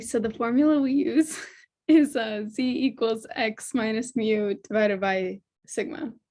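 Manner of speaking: speech broken by laughter. Answering the professor's question with the formula, laughing while talking. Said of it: "but not in a laughing way".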